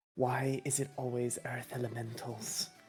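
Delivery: muttered quietly under the breath. Voicing a character whose eyes are twitching: muttered under her breath. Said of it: "under her breath, you can hear".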